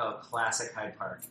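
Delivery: ordinary delivery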